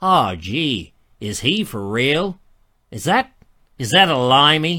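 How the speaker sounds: bad, slow, not very good put-on American accent. Imagining american viewers watching the rerun, in a bad american accent. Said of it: "Maybe they're American, ... That's not a very good American accent".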